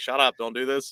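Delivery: ordinary talk, nothing marked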